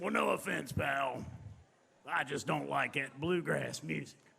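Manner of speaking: rough, raspy, rasping voice. Retelling what a man in the room said: imitating a raspy voice. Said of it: "He had a real raspy voice".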